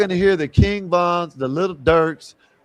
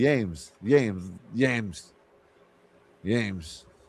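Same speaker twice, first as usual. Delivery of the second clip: put-on drawn-out Spanish accent; 7 semitones lower, 6 dB quieter than usual. Repeating the name the way someone said it: imitating a spanish accent. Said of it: "he trying to say it like a Spanish dude".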